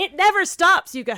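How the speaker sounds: loud, high-pitched yell. Talking over each other about who gets medical care, you end up yelling. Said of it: "Sorry, I'm yelling".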